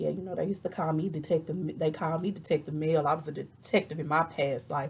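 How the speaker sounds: ordinary talk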